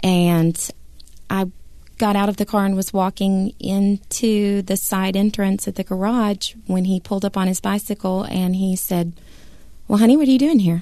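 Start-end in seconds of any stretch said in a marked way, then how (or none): 9.9-10.8 put-on, very calm, gentle, easy tone. Speaker retelling what he asked on arriving by bicycle, retelling a very calm voice. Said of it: "In the calmest voice".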